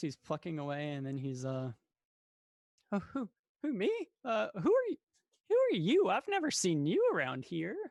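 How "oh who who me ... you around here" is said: startled surprise, very high and very loud. Voicing a bard startled by a stranger asking to join: surprised. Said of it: "surprised, more or less".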